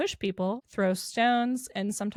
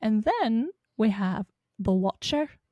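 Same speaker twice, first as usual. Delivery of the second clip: put-on Irish accent, given a try; 3 dB louder than usual. Narrating a ghost-story script, the speaker tries out an accent: irish accent. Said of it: "That was Irish".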